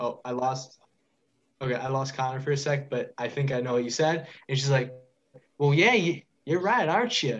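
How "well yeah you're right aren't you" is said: put-on Southern accent in a higher voice. A game master voices a woman character speaking to the players: southern accent. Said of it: "She was like Southern".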